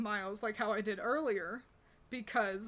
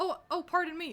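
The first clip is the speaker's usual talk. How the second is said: put-on polite customer-service voice, much higher; 6 semitones higher, 4 dB louder than usual. Describing someone they sneak past, quoting his apology in a mock-polite customer-service voice. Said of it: "my manager will accidentally use that on me".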